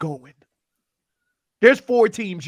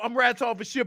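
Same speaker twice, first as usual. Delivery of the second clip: usual speaking voice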